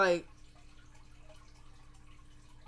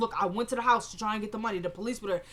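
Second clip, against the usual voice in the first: normal talking voice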